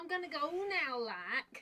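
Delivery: poorly done, put-on Scouse accent. Speaker does a bit as a Sky Sports pundit, in a bad Scouse accent. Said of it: "I was trying to do Scouts".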